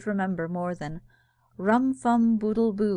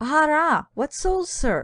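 high, astonished, amazed cry; 7 semitones higher, 4 dB louder than usual. Jack answers Ku about the things that hold souls; crying out in amazement. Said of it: "cried Jack in amazement".

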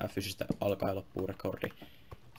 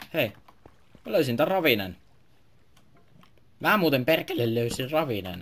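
very loud, voice breaking with excitement; 6 semitones higher, 12 dB louder than usual. Finding a ravine during a game stream, excited, voice cracking. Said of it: "Kivat nää mun voice crackit. Aina kun mä innostan ja alan puhua vähän kovempaa".

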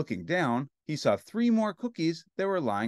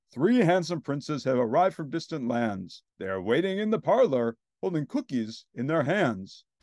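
ordinary delivery

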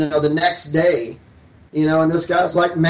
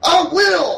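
put-on shrill, very high shout at full volume; 14 semitones higher than usual. Retelling a man walking off to talk to a manager, imitating a loud shout. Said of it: "as loud as he can".

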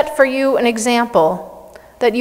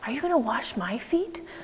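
very quiet, soft, startled little whisper; 15 dB quieter than usual. Retelling Jesus coming to wash feet in a full room: imitating Peter whispering. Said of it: "I imagine him kind of whispering".

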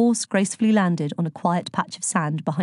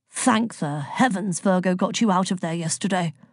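plain reading voice

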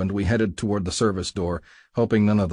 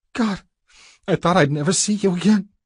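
very high moan; 10 semitones higher, 3 dB louder than usual. A woman, face buried in the narrator's chest, speaks to him, moaning. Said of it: "she moaned".

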